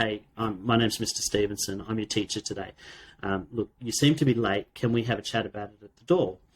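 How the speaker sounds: normal talking voice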